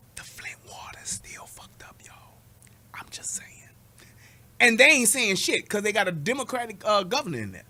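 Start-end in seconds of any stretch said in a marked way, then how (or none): 0.1-3.5 very quiet, hushed whisper. Speaker announces they will whisper the next line, then says it whispered. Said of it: "I'm gonna whisper this".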